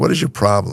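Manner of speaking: mock-irritated, snippy tone. Retelling a tense phone call with a woman, acting out his own snippy retort. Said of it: "I'm getting snippy".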